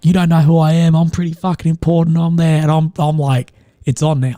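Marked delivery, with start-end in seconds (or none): 0.0-2.2 mock angry rant, higher pitch. Retelling a man on a flight who blew up at the speaker, imitating an angry rant. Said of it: "like just going off".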